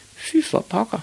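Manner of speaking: very high-pitched mutter under the breath. A narrator reads the son's reply to his father: muttered. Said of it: "mumlede Ivan".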